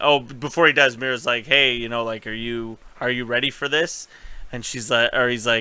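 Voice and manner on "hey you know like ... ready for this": ordinary talk, nothing marked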